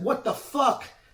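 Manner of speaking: put-on short, very high yelped outburst. Retelling being held in a choke after tapping: imitating own yell. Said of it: "I'm yelling".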